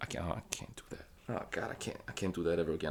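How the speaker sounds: hushed, embarrassed, soft, breathy, low whisper.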